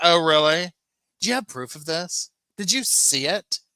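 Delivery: mock, high, super defensive pushing-back tone. Retelling a reply to questioning about evidence: imitating someone super defensive. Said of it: "she gets super defensive and she says".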